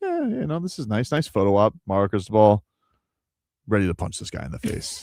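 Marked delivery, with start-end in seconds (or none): 0.0-1.7 pleasant, pitched-up, swooping sing-song. Voicing a coach's thoughts in a trophy photo: imitating pleasant Golding. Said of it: "Golding, pleasant".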